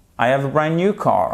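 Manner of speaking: falling tune at the end, on car. English lesson in French, affirmative sentence with pitch falling on final car. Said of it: "comme c'est une phrase affirmative, vous retombez sur la fin".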